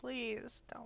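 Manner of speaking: soft, quivering, tearful voice near tears. Narrating a scene, voicing a woman with a tear down her face: tearful, lips quivering. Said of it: "she has like a tear rolling down her face".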